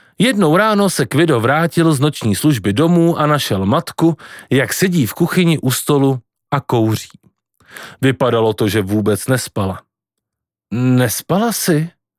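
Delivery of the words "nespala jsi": fear audible in the voice. Kvido, home from his night shift, questions his mother in the kitchen, fear in his voice. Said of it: "Řekl Kvido se strachem v hlase".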